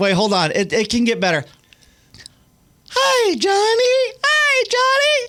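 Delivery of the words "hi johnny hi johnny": very high, very slow, drawn-out character voice. Doing a voice on request, put on the spot: Elmo voice. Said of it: "let's hear your Elmo".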